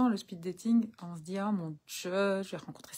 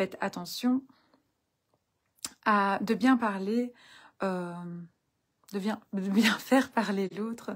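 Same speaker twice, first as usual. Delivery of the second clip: stumbling, fumbling restarts, tangled, tripping over words; 3 dB louder than usual. Speaker giving speed-dating tips to the audience, stumbling over words. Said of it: "je bafouille quand même".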